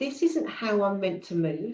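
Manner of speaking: ordinary delivery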